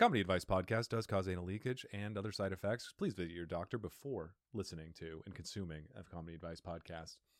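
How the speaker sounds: very fast, rattled-off, rapid delivery. At a fellow host's request, reading a comedy podcast's mock disclaimer, very fast disclaimer voice. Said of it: "just the really fast voice".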